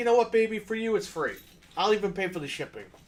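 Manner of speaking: overly generous, sarcastic, sugary-sweet tone. Pretending to message back a buyer who wants a lower price: mock sweet reply to a buyer. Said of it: "message the guy back and be like".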